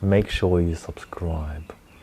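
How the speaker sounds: slow, menacing, threatening whisper. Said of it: "Don't threaten them".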